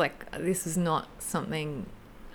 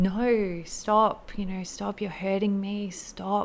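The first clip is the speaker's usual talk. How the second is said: put-on desperate, pained, screaming cries; 4 semitones higher, 4 dB louder than usual. Recounting a past experience of being hurt, retelling screaming. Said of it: "I was just screaming".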